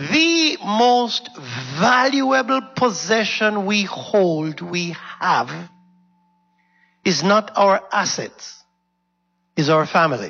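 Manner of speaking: very slow, deliberate, each word spaced out weightily. Addressing listeners, deliberately saying this sentence slowly. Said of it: "I'm going to say this slowly".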